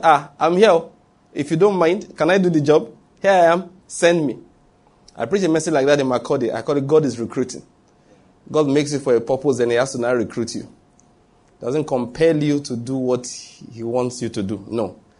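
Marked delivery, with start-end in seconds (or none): 0.0-4.4 mock, loud, pitched-up shout. Retelling Isaiah answering God's call: retelling a shout. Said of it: "He had to shout".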